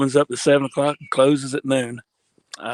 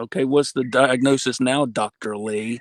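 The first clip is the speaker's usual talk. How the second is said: dry, mocking, sarcastic needling tone. Retelling a wife's remark about his self-diagnosis: imitating wife's sarcastic tone. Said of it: "she'll come to me with that sarcastic f-, tone of hers".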